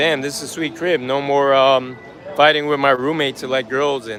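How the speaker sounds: normal talking voice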